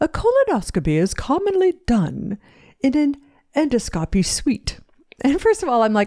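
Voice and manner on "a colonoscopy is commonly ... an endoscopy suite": bad put-on British accent, swooping and slow. Quoting a british doctor who came on, terrible british accent. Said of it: "I'm going to have a terrible British accent".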